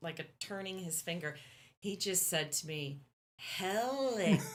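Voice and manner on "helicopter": very slow, each syllable deliberately stretched, pitched up. Retelling how a concertgoer answered with a hand signal: imitating very slow speech. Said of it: "he said very slowly".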